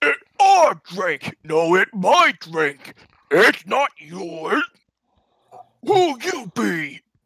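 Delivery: high, loud ogre voice, shouting. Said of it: "They look at you and they say".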